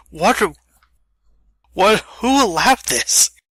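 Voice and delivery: put-on confused voice. Imagining Keanu Reeves playing a bad licensed game: imitating a confused Keanu Reeves. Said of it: "He'd be so confused".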